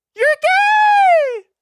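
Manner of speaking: voice jumping very high, loud, drawn-out, stretched. Reacting to a video, repeating its line back, voice jumping unexpectedly high. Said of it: "Why did my voice just get that high?".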